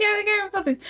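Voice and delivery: mock high-pitched dumb guy voice.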